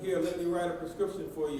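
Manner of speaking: normal talking voice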